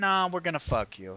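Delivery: ordinary delivery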